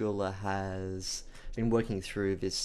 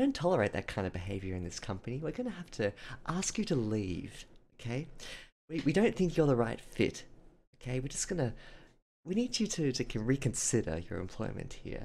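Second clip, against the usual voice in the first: fake-nice, sweetly fake sing-song voice with swooping pitch; 3 semitones higher than usual. Reading viewer comments, playing a fake nice smiley HR person: fake nice Helen from HR voice. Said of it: "I'm kind of like Helen from H R, like a really sort of fake, nice, smiley".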